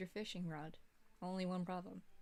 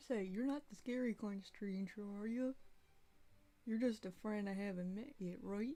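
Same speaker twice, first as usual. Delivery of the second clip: silly cartoon-character voice. Reading a game's dialogue aloud while picking answers for Goofy: Goofy voice. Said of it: "I don't know if I'm gonna be able to do a goofy voice".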